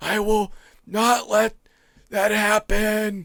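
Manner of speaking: slow, drawn-out, wheezy, breathless, winded voice. Reading a quote in a Joe Biden impression. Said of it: "my Biden is pretty darn good".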